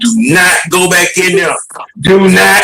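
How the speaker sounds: high-pitched, acted-out scream. Recalling watching Contreras bat against Boston, the speaker is retelling screaming at the TV. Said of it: "I was screaming at TV".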